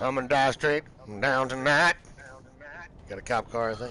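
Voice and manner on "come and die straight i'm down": ordinary delivery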